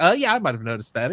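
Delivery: wry, dry sarcasm, plainly understated. Retelling a TV scene where the president replies: imitating a sarcastic reply. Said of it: "he just was being, like, sarcastic about it".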